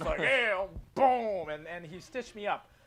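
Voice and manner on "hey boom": loud, pitched-up pro wrestler ring shout. Retelling how a doctor acted while stitching them up, WWE wrestler impression. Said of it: "pretending to be like a WWE wrestler".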